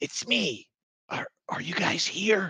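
hushed whisper. Narrator voices a figure darting over from the shadows, whispering. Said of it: "you hear a whisper".

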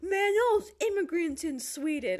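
fake American bro accent. Quoting a person's friend who dropped into their back-and-forth, put-on american accent. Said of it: "I'm doing an American accent".

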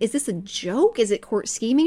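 normal talking voice

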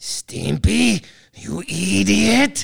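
rough, croaky cartoon voice with "idiot" drawn out. Taking a turn without practising, the speaker does a Ren impression. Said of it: "that's my impression of Ren from Ren and Stimpy".

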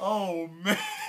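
high, loud laughing groan, laughing out loud.

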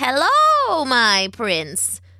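croaking, ancient crone witch voice. Narrator reads the witch greeting the bound prince, croaking. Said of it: "the witch croaked".

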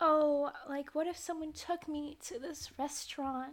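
weird cutesy voice, pitched high, shy. Describing a scene and quoting Kimmy, in Kimmy's weird cutesy voice. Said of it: "doing her weird, like, cutesy voice".

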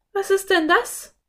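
sudden, very high-pitched exclamation. Hearing a sound, one companion suddenly calls out to the other. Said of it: "rief Anne plötzlich".

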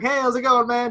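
super pleasant, very high, loud and cheery. Retelling greeting the cashier after the quarrel: imitating own pleasant greeting. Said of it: "I was super pleasant".

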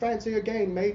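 put-on failed South African accent. Retelling what a South African man said to them, in a bad South African accent. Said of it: "That's not a South African accent at all".

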